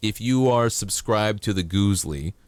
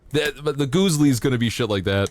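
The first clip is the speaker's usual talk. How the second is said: ordinary delivery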